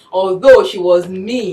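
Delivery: "mean" drawn out slow and loud.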